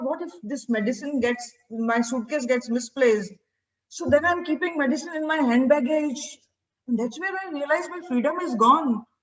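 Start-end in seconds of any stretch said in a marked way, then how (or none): none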